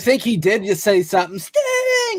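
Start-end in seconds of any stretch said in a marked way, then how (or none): 1.4-2.2 mock very high, bratty spoiled-kid tantrum scream. Imitating a wrestler's yell: imitating a tantrum scream. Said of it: "he sounds like a kid that's throwing a fit".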